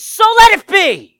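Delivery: very loud, high, ringing triumphant shout. Telling how he rises holding his scepter in heaven, acting out a triumphant shout. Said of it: "he shouts".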